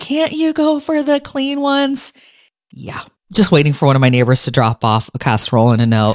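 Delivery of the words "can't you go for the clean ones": play-acted, very high, stretched-out shriek. Speaker retelling what they once screamed, retelling a scream. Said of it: "And I screamed".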